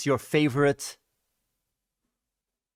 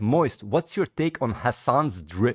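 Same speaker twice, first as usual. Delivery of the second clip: normal talking voice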